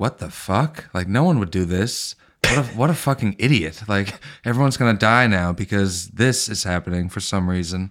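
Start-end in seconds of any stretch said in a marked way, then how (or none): none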